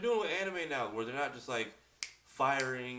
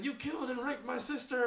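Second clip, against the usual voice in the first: mock scream, higher; 13 semitones higher than usual. Retelling a fight scene from a show: imitating someone screaming. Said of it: "he's screaming".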